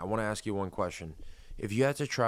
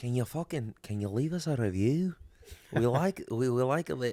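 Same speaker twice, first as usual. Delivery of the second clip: imitated Scottish accent; 3 semitones higher than usual. Retelling what restaurant staff said about a review: imitating a Scottish accent. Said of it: "That's like a Scot-, uh, Scottish, Irish accent, right?".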